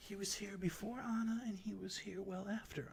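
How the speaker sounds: put-on high, soft elderly old-woman character voice. Answering questions about a stranger who was watching everyone, in an old woman voice. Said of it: "As you debate being evil to this old woman, this old, old, old / As you debate being evil to this old woman, ... She's so doubled over and just like she can barely get her own hand above her head. / A".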